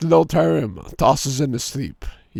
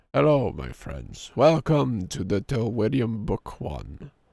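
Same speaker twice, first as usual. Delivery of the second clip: put-on low, hushed, old-style trailer-narrator voice; 5 semitones lower, 8 dB quieter than usual. Going live, a streamer greets friends in an old story trailer voice. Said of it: "I sound like an old story trailer".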